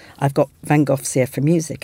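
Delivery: normal talking voice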